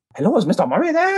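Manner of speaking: very high-pitched, poorly done fake Chinese accent. Retelling a 2:30 a.m. phone call, mimicking the caller's poor wannabe Chinese accent. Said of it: "talking in a really poor wannabe Chinese accent".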